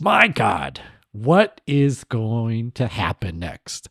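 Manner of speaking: very slow, drawn-out, weary, disappointed dad voice. Joking about the show's tone as a disappointed father watching his son: put-on disappointed father. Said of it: "we're like a disappointed father".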